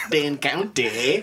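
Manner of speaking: slow mock Midwest accent drifting Jamaican-Irish.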